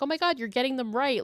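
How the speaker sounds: insincere, over-the-top gushing. Retelling a film scene where one girl hypes up another: imitating fake encouragement. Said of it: "like gassing her up".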